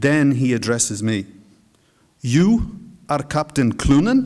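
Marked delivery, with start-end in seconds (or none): 2.2-4.3 incredulous tone of open disbelief. Narrator reads a man addressing the narrator on meeting him, incredulous question. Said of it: "He asks incredulously".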